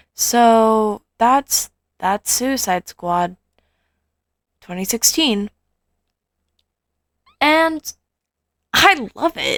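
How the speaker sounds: bored, uninterested tone with drawn-out "so". Recording near midnight and wrapping up, sounding really bored. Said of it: "I know I sound really bored".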